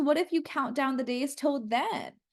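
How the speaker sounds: ordinary talk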